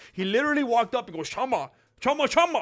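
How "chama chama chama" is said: video-game character voice speaking gibberish. Retelling how a man walked up to another man, Sims character gibberish. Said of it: "sounding like one of those characters from The Sims".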